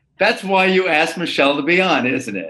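light, playful, teasing, ribbing tone. Podcast host to co-host Ron after a guest agreed with him, teasing. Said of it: "I'm teasing you, of course".

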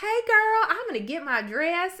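very high-pitched, put-on Southern accent. Speaker imitating people from one state south, imitating a Southern accent. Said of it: "Do they really talk like that".

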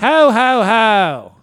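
loud, high ho-ho-ho laugh, Southern accent. Asked how southern santa sounds, answering: southern santa voice. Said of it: "How does Southern Santa sound?".

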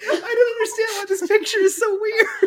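high, loud, confused squealing through laughter.

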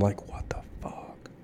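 very quiet, hushed, breathy whisper under the breath. Recalling their reaction in the theater during a film: retelling a whisper.

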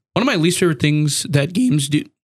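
voice cracking. Talking about games on a recording with another player, voice cracking. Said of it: "My voice just cracked really bad".

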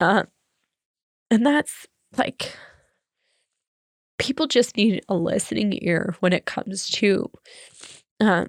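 speaking through tears. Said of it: "i don't know why i'm crying so much".

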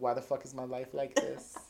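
acted flat delivery. Retelling a scene, the speaker quotes Ginny staring at the camera, mock-deadpan Ginny line. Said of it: "she looks deadpan on the camera, being like".

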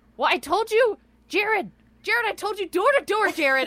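shrill, very high, loud scolding yell. Describing a scene where a character yells at Jared, imitating her yelling. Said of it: "she's just yelling at him".

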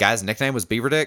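put-on slight Southern accent. Imitating a man in a family behind them: slight southern accent. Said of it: "slight southern accent".

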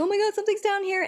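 high, fast, startled frightened gasp.

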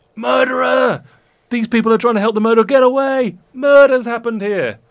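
furious, shrill, very loud, high-pitched angry shouting. Voicing a crowd turning on the group, shouting: crowd shouting angrily. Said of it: "they start shouting like".

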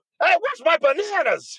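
very high-pitched yell. Retelling asking the wife where the bananas were: imitating own past yelling. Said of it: "stopped yelling".

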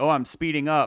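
plain

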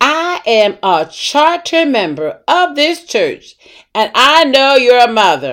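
mock affronted, huffy, high indignant voice. Retelling a churchgoer's reply after being welcomed as a visitor, mock-indignant. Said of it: "she answered me with an indignant voice".

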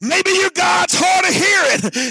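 put-on, high, cocky, mocking jeer. Retelling a bible story where one man mocks the others, retelling a mocking taunt. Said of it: "he starts mocking him".

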